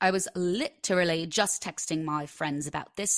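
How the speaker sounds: acted British-accented speech. Mentioning texting friends about anxiety, talking in a British accent. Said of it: "I don't know why I'm talking in a British accent".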